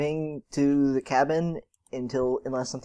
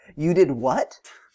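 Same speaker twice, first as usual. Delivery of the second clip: put-on sarcastic disbelief, passive-aggressive tone; 5 dB louder than usual. Describing how they'd turn to the family and react, acting out a sarcastic reply. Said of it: "Sarcastically, but to make I'm being passive aggressive".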